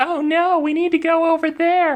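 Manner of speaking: irritating, very high, slow female voice. Showing how a female character sounds when game mastering: put-on female character voice. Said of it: "if I do a female voice".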